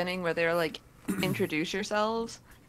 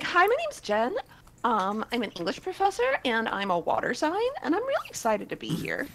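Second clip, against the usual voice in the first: put-on high, swooping, sing-song childlike baby voice; 5 semitones higher than usual. Speaker showing how she could have introduced herself: baby voice. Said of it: "what if I hit him with the baby voice?".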